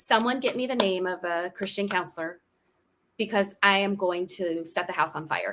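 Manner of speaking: usual speaking voice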